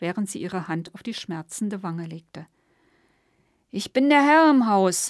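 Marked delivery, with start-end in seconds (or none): 3.7-5.1 put-on slurred, drunk-sounding speech. Reading a drunken man as he swings to strike again: slurred. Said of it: "lallte Gustav".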